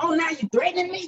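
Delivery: mock heated, disbelieving tone. Retelling confronting the man who broke into their car, retelling angry words. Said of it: "I was mad".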